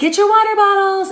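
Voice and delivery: high yell without anger. Retelling calling out to the family to get out in a hurry: imitating own yell, not angry. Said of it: "I'm not yelling angrily, but I'm still yelling".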